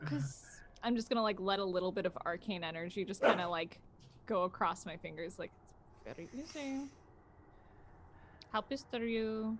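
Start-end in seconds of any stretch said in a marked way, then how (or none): 6.0-6.9 soft, conspiratorial half-whisper. Speaking in character to a companion about killing someone: half-whispering. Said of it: "And I'm whispering this".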